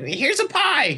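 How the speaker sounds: very high cartoon-character voice. Showing which voice was meant while discussing characters, in a cartoony voice. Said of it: "the cartoony one".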